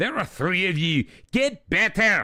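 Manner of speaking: fed-up Scottish accent. Commentator, disappointed in the team, addresses the players: scottish accent. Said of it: "addressing them in a Scottish accent".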